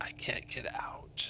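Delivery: eerie, hushed, ghostly, barely audible whisper. Game master voicing a voice whispering to the players from a cellar doorway, eerie whisper. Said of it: "you hear a voice whispering".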